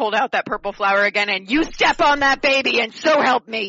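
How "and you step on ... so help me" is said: put-on stern scolding mom voice, raised pitch. A player's character threatens someone during an intimidation roll, in her best mom voice. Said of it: "Leisha's gonna put on her best mom voice".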